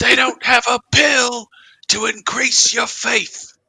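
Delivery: bad, very high-pitched, fake British accent. Quoting a roadside speaker from a sample, in a terrible British accent. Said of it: "Sorry for my terrible British accent".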